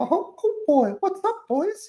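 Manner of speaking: bad, very high, slow, swooping cartoon squeak. Admitting a poor attempt, then doing a bad Mickey Mouse impression. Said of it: "I can't do a good Mickey Mouse impersonation".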